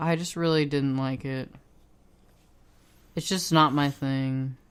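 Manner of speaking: flat, lifeless voice. Speaker answering a co-host's question, sounding dead. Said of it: "I sound so dead right now".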